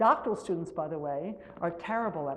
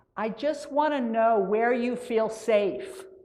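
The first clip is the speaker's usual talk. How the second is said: loud, high, very slow, strongly projected voice; 5 semitones higher, 6 dB louder than usual. Retelling a twelve-year-old answering into the microphone: imitating speaking really loudly. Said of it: "he goes really loudly into the microphone".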